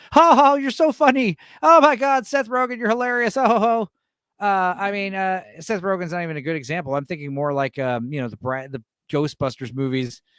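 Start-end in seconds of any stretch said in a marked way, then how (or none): 0.1-3.8 mock very high, loud, gushing fawning laugh. Mocking yes men who laugh at a comedian: imitating fawning yes men laughing. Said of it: "paid to laugh at them 'cause they're the yes men".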